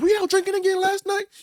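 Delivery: shrill, very high, loud angry scolding. Retelling how grandma confronted the uncle: imitating grandma cussing someone out. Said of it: "she was just cussing him out".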